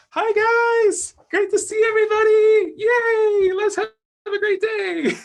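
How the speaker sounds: loud, very high-pitched squeaky voice. Describing how Libras bounce in each morning greeting everybody: Mickey Mouse voice. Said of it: "they have to have a Mickey Mouse voice".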